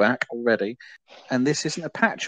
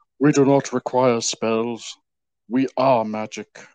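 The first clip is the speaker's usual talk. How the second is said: slow, measured, weighty, deliberate delivery. Quoting a film line, doing an impression of the actor: Tom Baker impression. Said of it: "dust off the impression here".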